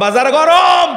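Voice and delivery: fiery, loud, slow preacher-style shout.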